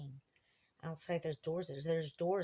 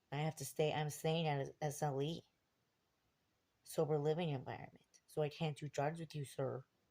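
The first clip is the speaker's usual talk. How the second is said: normal talking voice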